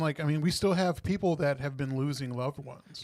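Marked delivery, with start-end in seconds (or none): none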